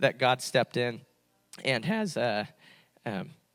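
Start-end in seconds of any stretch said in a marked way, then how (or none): 0.0-2.2 cracking, breaking voice. Speaker giving thanks after recalling a pastor's story, voice cracking. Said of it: "I had a voice crack".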